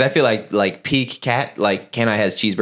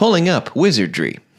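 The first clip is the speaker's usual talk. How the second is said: higher-pitched put-on voice assistant voice; 8 semitones higher than usual. Acting a skit as a phone assistant who can't understand: playing Siri. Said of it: "I'll be the, like, Siri or whatever".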